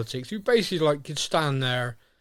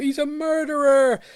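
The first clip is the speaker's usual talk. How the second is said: very high, shrill, screeching scream; 14 semitones higher, 6 dB louder than usual. Retelling a courtroom scene where a witness accuses someone: imitating someone screaming. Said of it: "screams out".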